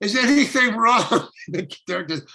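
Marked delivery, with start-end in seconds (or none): 0.0-1.3 loud, raised, pitched-up yell. Retelling a film shoot, performing what the cameraman yelled, retelling a yell. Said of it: "the cameraman yelled".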